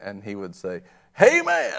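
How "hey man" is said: put-on thick southern accent, very high and loud. Retelling how a pastor friend greets people: imitating a very southern pastor. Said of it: "he is very southern".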